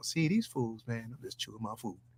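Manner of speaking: deep-set, low, dropped voice. Doing a monologue imitating Calvin: Calvin impression. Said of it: "let me do my Calvin's monologue".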